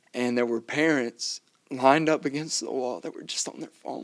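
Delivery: crying through the words, tearful breaking voice. A speaker tells the other speaker about kids at the park, crying. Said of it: "I don't know why I'm crying".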